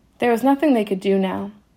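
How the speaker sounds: ordinary delivery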